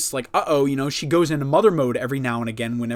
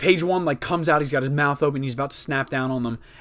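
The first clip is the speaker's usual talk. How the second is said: usual speaking voice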